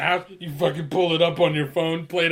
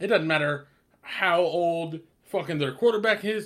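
plain

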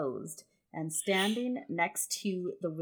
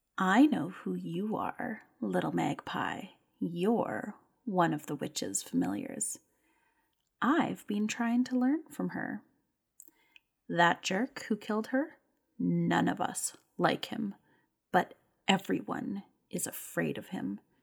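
whispering in a put-on character voice. Voicing a character who leans over to tell a secret: whispering in character. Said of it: "she leans over and she whispers".

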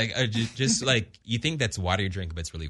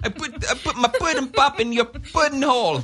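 put-on Jamaican-sounding voice, pitched much higher; 5 dB louder than usual. Joking about Bill with the others, doing a Bill Cosby impression that sounds Jamaican. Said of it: "You sounded like a Jamaican".

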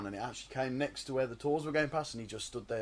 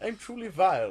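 put-on posh English voice, higher and louder; 7 semitones higher, 6 dB louder than usual. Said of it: "You're really posh".

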